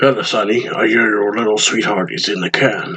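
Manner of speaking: low-pitched acted voice. Voicing the lieutenant in a game who greets sonny: deep voice for the lieutenant. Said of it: "I like him having a deep voice".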